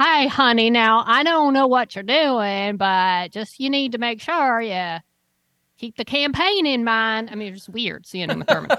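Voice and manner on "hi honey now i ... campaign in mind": put-on Texas accent. Retelling a film scene as its actress: Uma Thurman's Texas accent. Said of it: "Uma Thurman speaking in a Texas accent".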